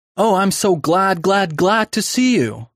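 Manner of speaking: eager, high-pitched, drawn-out cry. A girl greets the woman who came to meet her, eager cry. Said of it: "cried an eager voice in her ear".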